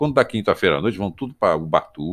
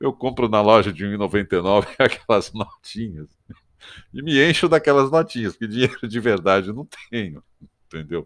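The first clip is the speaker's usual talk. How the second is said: nervous giggles breaking into the words; 4 semitones higher than usual. Explaining pretending to have play money, laughing nervously while talking. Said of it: "eu tô rindo de nervoso".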